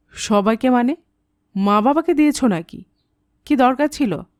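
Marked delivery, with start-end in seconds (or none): none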